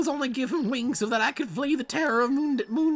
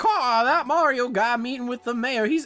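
put-on crow voice with Southern accent; 3 dB louder than usual. Voicing a crow, in a Southern-accented crow voice. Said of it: "Why are all the crows Southern?".

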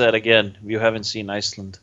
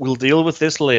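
ordinary talk, nothing marked

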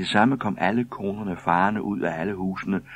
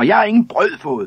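very high, very loud scream; 13 semitones higher, 10 dB louder than usual. Among women crowding the postman over mixed-up boxes, another one: shrieking. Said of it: "skreg en anden".

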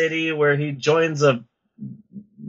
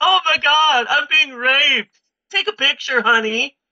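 very high, thrilled, gushing, excited voice; 10 semitones higher than usual. Retelling a film scene, imitating an excited woman from the film. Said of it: "she's so excited".

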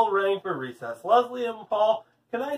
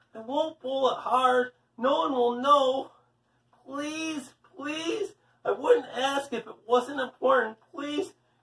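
high, pleading, begging over and over; 5 semitones higher than usual. Paul keeps asking Leslie after she refuses him, begging. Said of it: "Paul begged".

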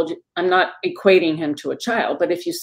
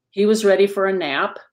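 ordinary talk

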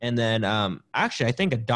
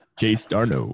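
raspy, deep put-on voice. Retelling how a manager called a player by nickname: raspy deep Bochy voice. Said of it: "just like that".

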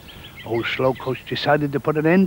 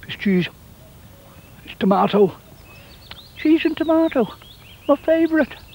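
very high voice, talking with mouth full; 12 semitones higher than usual. A tortoise eating its sandwich, naming the filling, talking with mouth full. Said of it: "I shouldn't speak with my mouth full".

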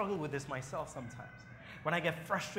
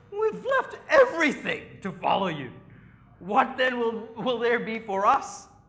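loud, high, slow, whiny voice; 7 semitones higher, 12 dB louder than usual. Speaker retells Peter answering Jesus, imitating Peter's whiny voice. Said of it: "can you hear this little whiny voice of his?".

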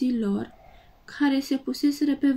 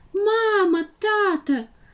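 high, terrified scream with "Mamă" drawn out; 7 semitones higher, 3 dB louder than usual. Narrator reads two young dinosaurs running and calling for their parents, terrified scream. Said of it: "Țipau ei".

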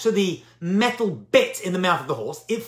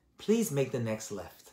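gentle, lovely voice, very hushed and deep; 8 semitones lower, 11 dB quieter than usual. Describing typing a destination into Waze, imitating the lovely Waze voice. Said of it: "A lovely voice comes over".

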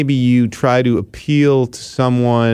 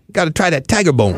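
speaking in a higher-pitched voice; 5 semitones higher than usual. Showing how a friend talked: imitating a friend's Jamaican-sounding way of talking. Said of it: "That's the way he talked".

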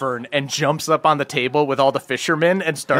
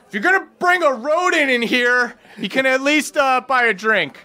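very high-pitched yelling; 10 semitones higher than usual. Narrating a tavern scene, voicing the half-orc woman behind the bar: yelling half-orc barkeep. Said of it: "the half-orc woman back from behind the bar just yells".

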